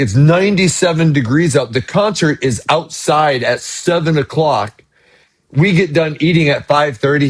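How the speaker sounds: ordinary talk, nothing marked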